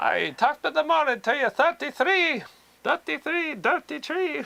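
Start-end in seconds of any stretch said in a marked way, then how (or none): 1.5-4.4 bad fake Irish accent, much higher pitch. Attempting the other speaker's accent on a number, in a bad Irish accent. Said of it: "I'm sorry if I'm murdering your accent".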